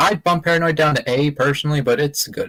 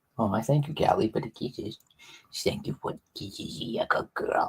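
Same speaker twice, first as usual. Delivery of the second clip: breathy voice used for talking to pets; 5 semitones lower, 11 dB quieter than usual. Thanking a pet for kisses: voice for talking to pets. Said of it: "that's just the voice I used to talk to my pets".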